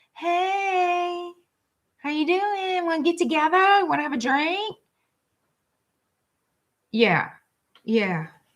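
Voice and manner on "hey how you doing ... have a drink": cheesy, sugary, high, drawn-out "hey". Imitating them trying to come back to Gemini: imitating cheesy sweet talk. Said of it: "they're gonna try to come in and be all cheesy".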